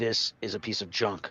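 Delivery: very slow, drawn-out, stoic stock gunslinger voice. Showing the other speaker the voice from the show: Mandalorian voice. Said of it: "I could do that voice".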